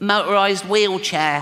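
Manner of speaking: put-on acted little boy voice. Acting out a six-year-old answering his father, in little Timmy's voice. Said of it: "I promised Jane I wouldn't do the voice".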